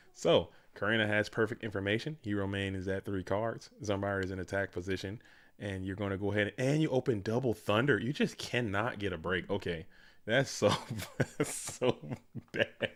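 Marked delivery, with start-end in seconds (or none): 10.2-12.9 slow, laughing through the words, barely held laughter. Commenting on a player opening Double Thunder: laughing while talking. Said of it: "I'm sorry for laughing".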